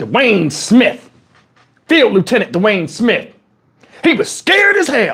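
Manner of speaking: swooping Southern country drawl. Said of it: "The way he had a Southern country accent".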